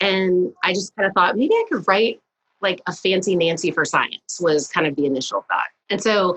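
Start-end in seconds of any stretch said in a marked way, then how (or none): none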